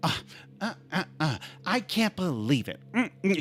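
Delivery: soft, quiet muttering to oneself. Retelling driving to the diner, mother in the back, imitating mom talking quietly. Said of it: "She's talking quietly".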